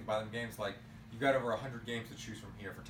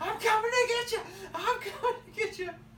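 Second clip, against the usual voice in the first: very high-pitched, manic, crazy screaming voice; 8 dB louder than usual. Retelling yelling at other players online while playing Jason, high-pitched crazy scream. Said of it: "talking to this high-pitched, crazy voice just screaming".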